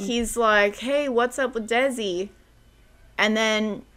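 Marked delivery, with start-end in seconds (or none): 0.8-2.3 light, put-on loud calling voice. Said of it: "and the rest really loud".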